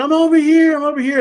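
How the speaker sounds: high-pitched, loud urgent yelling. Lost in snowy woods, retelling yelling for help to people searching. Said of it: "So I start yelling".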